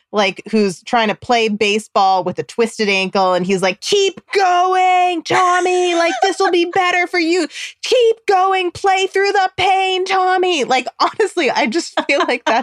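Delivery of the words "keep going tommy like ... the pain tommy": acted-out very high yelling, sports-sideline style. Imitating a boomer dad yelling at his injured kid: imitating a yelling boomer dad. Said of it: "a boomer dad who's just yelling at his kid".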